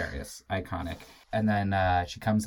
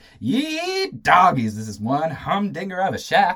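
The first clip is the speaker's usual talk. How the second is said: put-on very high, very loud, swooping thick Tennessee accent; 10 semitones higher, 10 dB louder than usual. Describing a favorite character and quoting what she says, thick Tennessee accent. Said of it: "Thick Tennessee accent".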